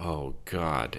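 muttering. A man looks down at nothing and mutters to his companion, muttered. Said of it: "Adam muttered".

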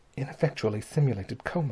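whispering. Dr. curtis speaks to the narrator while watching the girl, whispered. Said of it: "whispered Dr. Curtis to me".

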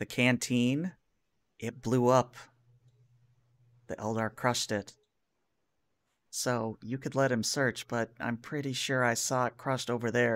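soft, hushed stage whisper. Voicing a corporal who leans up to a player's ear: half-whispering. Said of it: "whispers in your ear".

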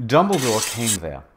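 ordinary delivery

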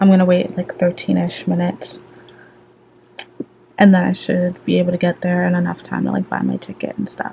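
hushed whisper under the breath. A vlogger whispering so her mom won't hear her vlogging. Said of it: "I'm whispering because I don't want my mom to hear".

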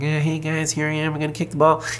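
silly put-on goofy voice, high and fast. Retelling a joke voice given to the kicker while watching a game: put-on funny voice. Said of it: "he puts on this funny voice".

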